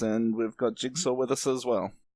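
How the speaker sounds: usual speaking voice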